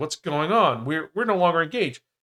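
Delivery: put-on baffled, thrown-off, stumbling disbelief. Retelling a story's heroine hearing she is still engaged: acting confused. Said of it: "She's completely confused".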